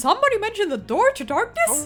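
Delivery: high cartoon mouse impression. Showing off to friends, doing a Mickey Mouse voice. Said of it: "your Mickey Mouse is so good".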